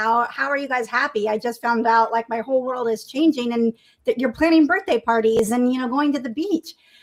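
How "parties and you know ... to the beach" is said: ordinary talk, nothing marked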